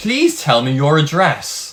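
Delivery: sing-song automated robot voice. Speaker retells calling the taxi company and reaching an automated line, robot voice. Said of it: "a fucking robot voice".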